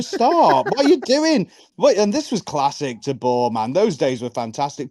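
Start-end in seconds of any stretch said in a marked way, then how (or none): 0.0-1.5 high, exasperated, mock pleading tone. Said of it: "and you just go".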